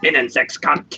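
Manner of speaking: angry, mad-sounding voice. Explaining how to pronounce german words: angry voice. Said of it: "Just gotta say it in an angry voice. Like".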